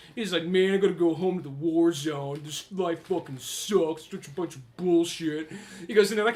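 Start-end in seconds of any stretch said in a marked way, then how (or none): 0.5-5.6 put-on surly, sulky nineties slacker teen voice. Acting out a comic's kid heading home: imitating a shitty nineties kid. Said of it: "that one shitty nineties kid".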